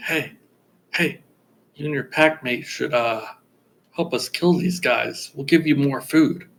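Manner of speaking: whispering. Whispering in character to a sleeping owlbear, offering food: whispering to an owlbear. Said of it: "I'm gonna whisper to it".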